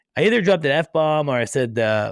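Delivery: normal talking voice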